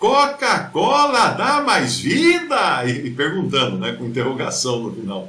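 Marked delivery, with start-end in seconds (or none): 0.0-2.8 big booming voice, very high, very slow. Retelling how Fernando read a bar's sign aloud, imitating Fernando reading loudly. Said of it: "leu bem alto".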